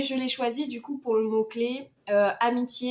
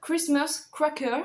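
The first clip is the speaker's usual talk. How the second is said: put-on English accent, higher pitch; 4 semitones higher than usual. Reading out a book sub-category title in a 'perfect' English accent. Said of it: "avec mon accent anglais parfait".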